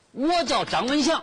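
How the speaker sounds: Henan dialect. A storyteller voices the assassin right after the attack; Henan dialect. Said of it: "刺客抄的是河南话".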